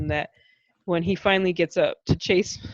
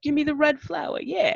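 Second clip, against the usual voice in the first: New York gangster voice, pitched higher; 9 semitones higher than usual. Quoting the king's line in the film: Walken-style New York gangster voice. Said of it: "He's talking like a New York gangster".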